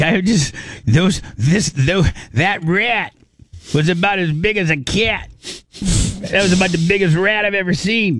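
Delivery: high-pitched imitated New York accent.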